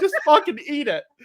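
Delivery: very high, mad, spoiled-brat tantrum. Recounting being asked about their apple pie, the speaker acts out their own mad outburst. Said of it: "I was so mad".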